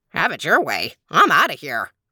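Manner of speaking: ordinary talk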